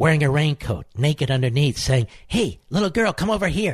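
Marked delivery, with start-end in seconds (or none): 2.3-3.7 creepy, sleazy, coaxing, pitched-up call-out. Mocking a rival's way of talking: imitating a creepy man on a street corner. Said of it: "Talks like a guy in the corner in Manhattan".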